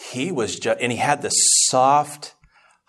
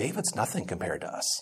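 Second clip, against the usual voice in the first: calm, hushed, very soft little voice; 4 semitones lower, 11 dB quieter than usual. Recalling a man who took him aside, quoting him in a calm little voice. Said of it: "calm little voice".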